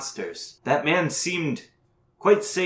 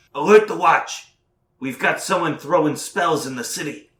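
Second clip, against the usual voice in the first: loud shouted call; 2 semitones higher, 4 dB louder than usual. Voicing a guard calling up to the wall: guard shouting an order. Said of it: "he shouts up to somebody on the wall".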